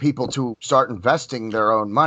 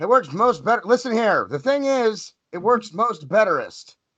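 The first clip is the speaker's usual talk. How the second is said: very high, rambling, put-on politician voice; 11 semitones higher than usual. Joking about a verbal slip, doing a Joe Biden impression. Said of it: "I sound like Joe Biden now".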